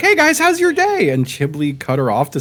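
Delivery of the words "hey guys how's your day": very high, squeaky, bright, bubbly cheerful voice. Retelling a teammate's greeting in a game: imitating a bubbly girl. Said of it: "a very bubbly girl on our team who was like".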